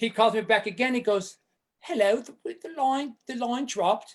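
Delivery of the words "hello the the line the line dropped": put-on English accent. Retelling a phone call from england, imitating the caller's english accent. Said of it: "keep this little accent going".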